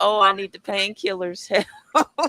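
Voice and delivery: fake crying, sobbing, begging tone. Acting out how they'd react to the injury: mock crying. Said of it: "I'd be, like, crying".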